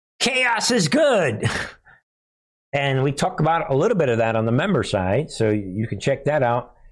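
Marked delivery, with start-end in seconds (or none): 0.2-1.5 high, slow, drawn-out mocking voice. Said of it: "he spent yesterday saying".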